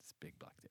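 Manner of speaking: hushed whisper.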